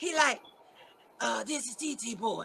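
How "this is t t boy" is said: imitated raspy, dry voice, much quieter. Retelling a phone call, imitating the caller in a raspy, dry voice. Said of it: "his voice was so raspy and dry".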